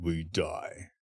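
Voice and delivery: hushed, deep-voiced, very quiet dramatic delivery. Repeating another participant's line to praise it, in Dan Mason's deep voice. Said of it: "and with his deep voice".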